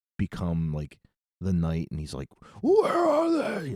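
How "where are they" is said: very high, angry shouting. Talking about a favorite film version, quoting the hero when angry, imitating Michael Keaton's angry shout. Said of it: "I like when he's like angry".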